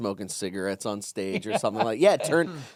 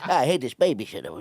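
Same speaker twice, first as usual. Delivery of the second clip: put-on nasal baby-gangster voice. Describing a joke of his, doing a baby Tony Soprano impression. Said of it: "the impression was baby Tony Soprano, where I go".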